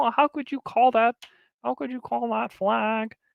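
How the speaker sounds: pitched way up, small puppet-like voice. Imitating someone protesting to the refs about a flag, in a little Kermit the Frog voice. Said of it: "This little freaking Kermit the Frog voice".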